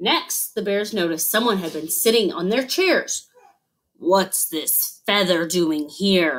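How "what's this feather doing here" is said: low, growling, bear-like voice. Father Bear, home to find traces of an intruder, growls. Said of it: "Growled Father Bear".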